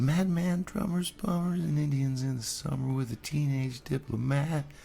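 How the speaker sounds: put-on girlish voice.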